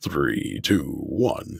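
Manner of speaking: very low, creaky, rough gravelly voice. A speaker shows chat the gravelly voice they asked for: gravelly voice. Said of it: "my grovelly voice".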